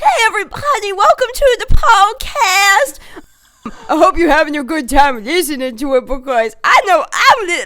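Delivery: obnoxious, very loud, high-pitched pet-talk voice. Showing listeners the voice used for talking to a dog: obnoxious dog-talking voice. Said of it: "my dog voice is the voice I talk to my dog".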